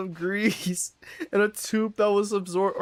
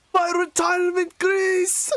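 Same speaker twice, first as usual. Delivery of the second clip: put-on shrill, very high cry in a Scottish accent; 10 semitones higher, 3 dB louder than usual. Recalling a Simpsons episode and quoting the line: Willie voice. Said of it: "The best I can do is Willie the Scotsman".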